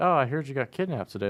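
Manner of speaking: breezy, offhand delivery. Contrasting the expected reaction with the characters' casual one: imitating a no-big-deal tone. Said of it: "there's just no big deal".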